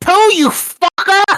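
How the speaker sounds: very high, loud, cross cartoon squeal. Taking turns doing voices, addressing Pooh: Rabbit voice. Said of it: "I'm the rabbit".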